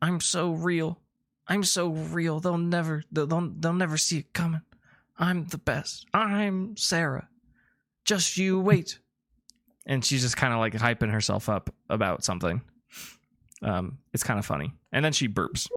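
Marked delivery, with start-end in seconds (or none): 0.0-9.0 groggy, grumbly, mumbly sleep-talk, pitched up. Describing a sleeper hyping herself up, Sarah's mumbly sleep talk. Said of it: "in a kind of a grum, uh, mumbly voice".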